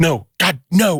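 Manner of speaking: high, angry, flat-out refusal. Retelling her reply to a joke plan for couples therapy: imitating someone angry. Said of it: "she got really mad".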